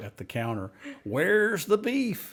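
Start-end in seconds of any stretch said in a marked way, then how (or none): 1.0-2.3 put-on shrill, very high old-woman scream. Retelling an ad where an old woman yells at the counter: imitating an old woman screaming. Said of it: "this old woman that was screaming at the guy".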